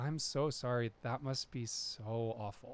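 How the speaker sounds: feigned earnest sorrow. Speaker reenacts what they used to say to people, mock-earnest sympathy. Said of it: "with a quality that was so earnest ... enough of like a lilt to it".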